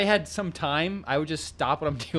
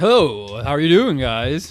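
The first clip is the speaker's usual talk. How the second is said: mock radio announcer voice, louder; 9 dB louder than usual. Greeting listeners at the podcast's start: put-on radio voice. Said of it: "trying to match my radio voice".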